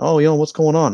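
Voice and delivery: put-on Swedish accent. Imagining him at McDonald's just before a fight starts, Swedish accent. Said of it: "In his Swedish accent".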